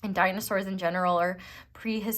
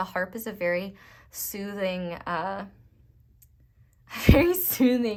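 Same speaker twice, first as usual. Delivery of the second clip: slow, giggling, laughing through the words; 3 dB louder than usual. Describing the harp as a soothing instrument, laughing while talking. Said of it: "sorry, I'm laughing".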